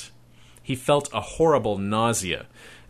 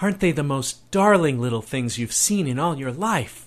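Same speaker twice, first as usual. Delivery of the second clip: swooning, rapturous gush, near fainting; 4 semitones higher than usual. Catherine speaks to Charles, in swooning rapture. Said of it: "in that voice of hers that meant she might faint any instant from sheer rapture".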